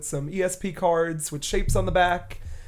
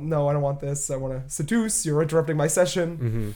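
normal talking voice

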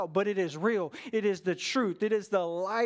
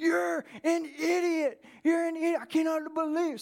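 furious high drawn-out angry scream; 8 semitones higher than usual. Retelling a man on the phone getting angrier, imitating him screaming. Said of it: "he just starts screaming".

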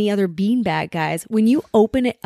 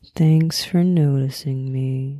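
put-on cartoon donkey voice; 7 semitones lower than usual. Asked for a best Eeyore impression; Eeyore impression. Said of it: "Give me your best Eeyore impression".

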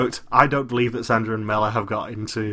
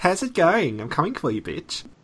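put-on Australian accent, high and swooping; 7 semitones higher than usual. Imitating another speaker's intro line in a put-on Australian accent. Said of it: "sounds so wonderful in an Australian accent".

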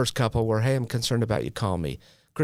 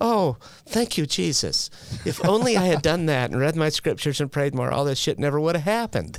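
mock ironic, sarcastic, high-pitched tone; 6 semitones higher than usual. Recounting your own past reaction during a hard time, retold sarcastic remark. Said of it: "that was, again, sarcasm".

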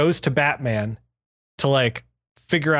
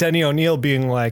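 plain

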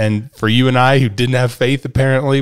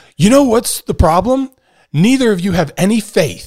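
heated, worked-up, fired-up outburst, pitched up; 9 semitones higher than usual. Retelling grandpa's outburst in the fishing boat: imitating someone fired up. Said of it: "finally he gets all fired up".

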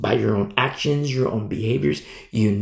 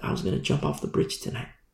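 whispered, barely voiced, soft and secretive; 9 semitones lower, 8 dB quieter than usual. Retelling what a kid confided behind a closed door: imitating a whispering kid. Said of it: "The kid's whispering".

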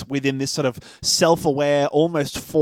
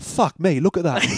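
put-on sudden broad, thick British accent; 3 semitones higher than usual. Retelling a movie scene where Günther sees something surprising, in a British accent. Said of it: "Absolutely full back to British shit".

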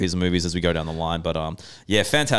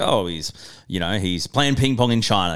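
ordinary talk

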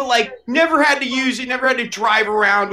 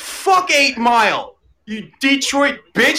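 put-on play-acted, all-out drunken ranting; 4 semitones higher than usual. Retelling a drunken night shouting at a rival: imitating a drunken rant. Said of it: "I just went full blown".

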